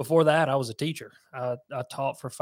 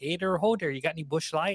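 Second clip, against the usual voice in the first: full-blown put-on Minnesota accent; 3 semitones higher than usual. Speaker imitates a buddy from Minnesota, imitating Sam Moore's Minnesota accent. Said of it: "he is full blown, like".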